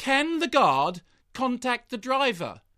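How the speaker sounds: slow, loud, electronic computer announcer voice. Complaining about train delays, mimicking the onboard electronic announcement: [name] train announcement voice. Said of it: "the electronic computer voice on the train".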